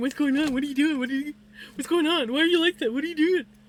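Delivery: nonstop, badgering, insistent pestering tone. Retelling being questioned while fishing under a desk: imitating Vinny. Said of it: "I've got Vinny climbing all over me, going".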